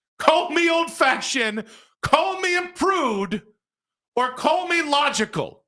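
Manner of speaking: heated insistent tone. Stating a strong opinion to the other speaker, loud, almost yelling. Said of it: "I'm not yelling at you".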